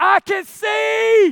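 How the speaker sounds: high, carrying yell. Retelling yelling at the whole restaurant on being able to see, retelling a yell. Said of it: "I'm yelling at the whole restaurant".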